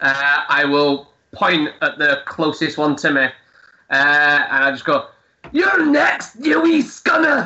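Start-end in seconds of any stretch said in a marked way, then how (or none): 5.5-7.5 menacing scream, higher pitch. Pointing at the closest goblin in character, before raging: threatening scream. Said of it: "in response to the screaming and threats".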